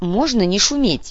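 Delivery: grumbling with displeasure, discontented. Narrator reads Nugar, weighing an ingot, in displeased grumbling. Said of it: "недовольно проворчал Нугар".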